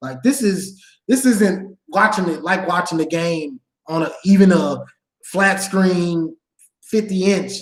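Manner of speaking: usual speaking voice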